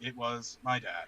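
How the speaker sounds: very slow, low, flat, drawn-out deadpan monotone. Imitating Kate retelling her Christmas story: monotone Kate imitation. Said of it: "all just like this".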